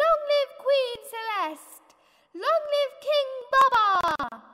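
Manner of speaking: very loud, high-pitched crowd-style cheer, single voice. The elephants hail their new king and queen, shouting in unison. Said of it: "the elephants shouted with one voice".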